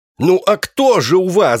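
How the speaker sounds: high-pitched loud shouting. The narrator, questioning the library's vizier, shouted. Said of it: "закричал я".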